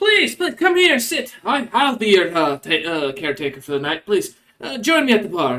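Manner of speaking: high kobold voice with swoops. Voicing a kobold barkeep greeting a famous patron: kobold barkeep voice. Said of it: "and he goes".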